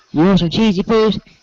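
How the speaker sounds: high, motherly cartoon voice. Doing a character's mom offering a snack: imitating Cartman's mom. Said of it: "like his mom would say".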